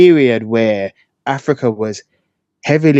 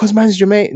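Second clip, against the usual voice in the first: much higher-pitched, mocking jab. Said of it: "people are gonna be like".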